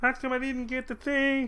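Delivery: weird, high, dumb simpleton falsetto.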